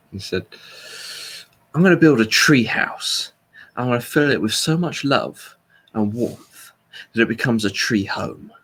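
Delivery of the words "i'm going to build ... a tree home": menacing, slightly aggressive action-film voice. Retelling a talk show line by Jason Statham: Jason Statham action film voice. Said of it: "action film voice, and this just kind of slightly aggressive, menacing way".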